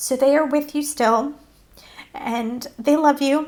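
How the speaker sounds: speaking through tears. Telling listeners their lost pets are still with them, while crying. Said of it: "I'm crying".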